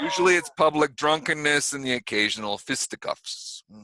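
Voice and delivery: put-on speech in a New York accent. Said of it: "here we are speaking in an accent".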